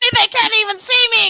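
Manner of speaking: high, bragging scream. Retelling a character screaming at the cops from a tinted car: imitating someone screaming. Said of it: "he's screaming at the cops".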